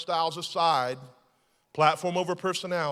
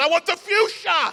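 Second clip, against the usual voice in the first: put-on yelling, higher and louder; 9 semitones higher, 11 dB louder than usual. Acting out what a group of men shouted in a fight, retelling a yell. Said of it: "I don't think I do a good Russian accent".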